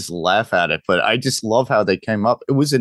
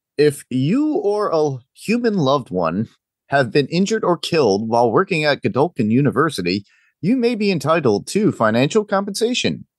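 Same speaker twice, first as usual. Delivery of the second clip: pitched-up TV ad announcer voice; 6 semitones higher than usual. A host reading the Gen V finale synopsis aloud in a TV announcer voice. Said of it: "I have to say it in like some sort of TV announcer voice".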